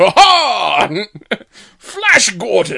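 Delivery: projected, every "ha" stretched out. Imitating an old-school theatrical actor's line from the film: over-exaggerated theatrical Brian Blessed voice. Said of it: "over-exaggerated pronunciation thing".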